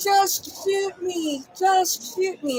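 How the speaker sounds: mock yell, high and stretched long. Retelling an arrest, imitating the arrested man yelling. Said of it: "he's yelling".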